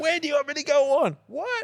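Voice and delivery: very high-pitched, shouted yelling. Retelling being booked at a loud nightclub: retelling own yelling. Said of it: "and I'm yelling".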